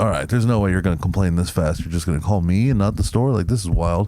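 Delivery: ordinary delivery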